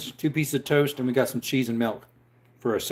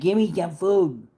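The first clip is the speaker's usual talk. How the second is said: higher-pitched, pleading, begging puppy voice; 5 semitones higher than usual. Voicing the dog that is trying to sneak food: voicing the begging dog. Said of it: "He's like".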